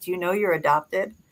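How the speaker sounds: whispered words. Retelling whispering a question to a kitten: retelling a whisper.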